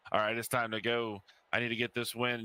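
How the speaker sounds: ordinary delivery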